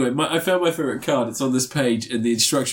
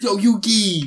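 put-on Boston accent, pitched a bit higher; 7 semitones higher than usual. Chatting about Yu-Gi-Oh, quoting Yugi's friend in a Joey Wheeler Boston accent. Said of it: "He's got a Boston accent".

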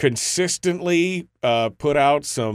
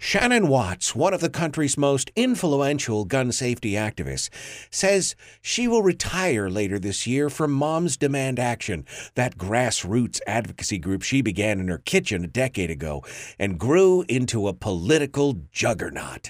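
put-on awed, reverent, admiring newsreader tone. Reading a newspaper article aloud after searching for the right voice: mock admiring reading voice. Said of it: "I've gotta find the right voice for this".

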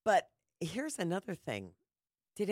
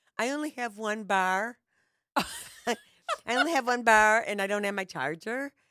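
loud, put-on Valley Girl accent; 4 semitones higher, 7 dB louder than usual. Mocking someone's excuse about having one bar, in a Valley Girl accent. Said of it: "I don't know why I'm using the Valley Girl accent".

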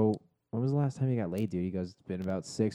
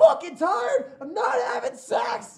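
mock very high, full-throated, top-of-lungs yell; 6 dB louder than usual. Retelling what a man yelled while throwing a traffic cone, retelling a top-of-lungs shout. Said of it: "shouting at the top of his lungs".

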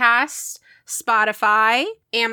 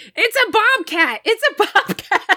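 put-on very high, screeching scream; 11 semitones higher than usual. Retelling a husband fighting off a bobcat: imitating someone screaming. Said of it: "just starts screaming".

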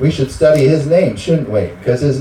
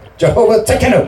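put-on, pitched-up Japanese accent; 8 semitones higher than usual. Speaking to a congregation, saying a name of God in Japanese-style pronunciation. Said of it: "I like the Japanese dialect".

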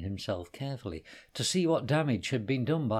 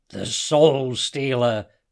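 loud growling voice at full volume; 10 dB louder than usual. Asked what weapon he thinks the man has, Hassan answers, growled. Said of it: "growled Hassan".

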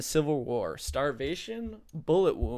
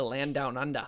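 put-on Australian accent. Answering a trivia question aloud: australian accent. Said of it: "the only one he said with an Australian accent".

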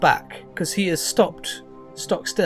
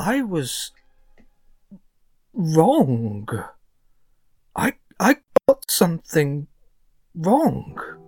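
genuinely horrified, appalled. Voicing a character who realizes he got a name wrong: genuinely horrified. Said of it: "his face looks genuinely horrified".

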